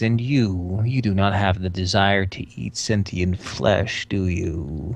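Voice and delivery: low, rasping, raspy reptilian lizard mage voice. Game master voicing a lizard mage questioning the player, raspy lizard mage voice. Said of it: "its raspy voice says".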